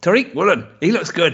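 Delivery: horrible, high, fake Irish accent. Saying a player's name the way Mike says it: put-on Irish accent. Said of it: "was that your attempt at an Irish accent?".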